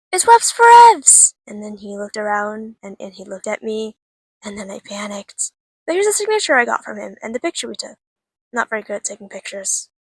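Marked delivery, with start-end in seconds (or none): 0.1-1.3 drawn-out thrilled yell, very high and very loud. Recalling spotting a creator at an event, retelling an excited shout. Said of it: "I just shouted".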